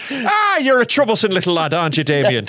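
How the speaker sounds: put-on Irish accent. Improvising an Irish remake of The Omen, addressing the boy in an Irish accent. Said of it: "the Irish remake".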